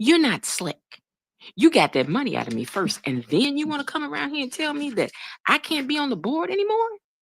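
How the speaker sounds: high-toned voice, climbing up in pitch. Retelling what a woman said about being taken off the board, high-toned voice. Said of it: "but in a high tone way".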